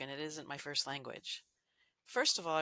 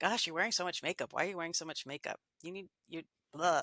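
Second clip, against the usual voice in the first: put-on harsh, angry, critical, disapproving scolding. Imagining scolding a daughter about her makeup, mock-angry critical voice. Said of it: "in such an angry voice as that".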